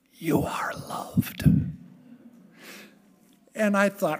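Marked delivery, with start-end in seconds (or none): 0.2-1.4 hushed, breathy, soft whisper. Retelling what Reverend Pat would say in her ear: imitating Reverend Pat whispering. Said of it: "he would whisper in my ear".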